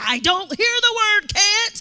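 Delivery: in-your-face coach-style screaming, loud, drawn-out, rising. Retelling what she yelled while pushing the runners, imitating someone screaming. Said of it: "she's screaming at my face".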